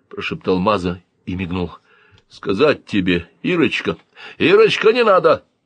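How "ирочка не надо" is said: very high-pitched, shrill yell. The pig cuts in on Maza mid-line, shouted. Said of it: "крикнул свинья".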